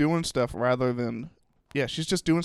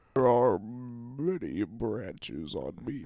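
soft tree-giant drawl, "many" stretched; 2 semitones lower, 5 dB quieter than usual. Playing along in a chat, the speaker puts on a Lord of the Rings ent voice. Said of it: "You kind of sounded like an int from Lord of the Rings there".

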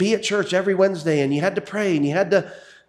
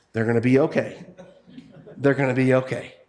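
put-on calm voice, much lower; 7 semitones lower than usual. Predicting Catherine Reyes answering people who ask how to manage, imitating Catherine Reyes calmly. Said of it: "say calmly".

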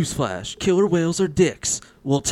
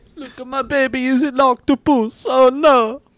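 high, loud, shouted put-on Italian accent; 12 semitones higher, 4 dB louder than usual. Showing off their baby in a comedy bit, Italian accent. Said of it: "dying to put out your Italian accent".

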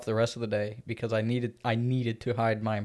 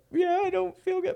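very high, teary, acted sob-talk whimper. Speaker retells answering a woman who thought they were sick, imitating own crying. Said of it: "But I'm like crying".

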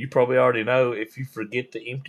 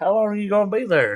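put-on, high-pitched, shouted yell; 8 semitones higher, 4 dB louder than usual. Retelling how a guy yelled out at the crew working behind houses: retelling a yell. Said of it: "this guy yells out".

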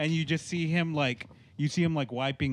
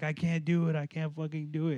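put-on panicked, freaked-out pleading voice; 2 semitones higher than usual. Retelling a movie training scene, a soldier under fire: imitating a freaked-out soldier. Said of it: "he's just getting super fucking freaked out".

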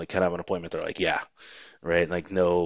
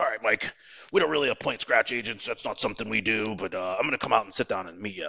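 put-on elderly man's way of talking; 4 semitones higher than usual. Recounting what an old man from Travelers told him about appointing agents, old man impression. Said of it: "he talked like this, and he was real old".

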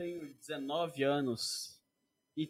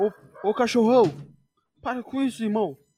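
mock yelling; 4 semitones higher, 9 dB louder than usual. Speaker imitates someone yelling at the noisy dog, imitating a shout at the dog. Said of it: "você vai ouvir Bruna ele gritando".

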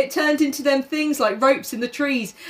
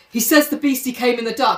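normal talking voice

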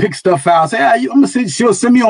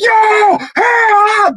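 put-on frightened yell, very high-pitched. Retelling a plane suddenly dropping in turbulence, retelling a scared yell for help. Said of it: "I'm yelling".

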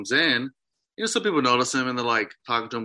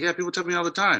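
acted, pitched-up, sarcastic dismissive tone; 6 semitones higher than usual. Retelling what a woman said back to him, retelling a sarcastic reply.

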